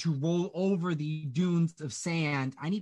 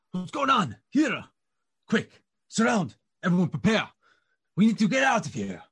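loud, swooping, urgent shouts; 2 semitones higher, 6 dB louder than usual. The game master voices sudden shouts heard through a thickening fog; sudden shouting. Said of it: "you all hear the sudden shouts".

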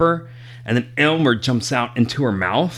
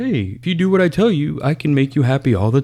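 gentle, lulling, very calm soothing voice; 3 semitones higher than usual. Retelling how a parasitic character talks to him, mimicking a very calming voice. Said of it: "talk to him in a very calming".

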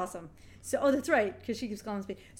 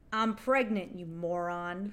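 put-on deadpan voice, flat and expressionless; 3 semitones lower than usual. Speaker retells a scene where Bailey answers a man, imitating Bailey, deadpan. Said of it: "totally deadpan".

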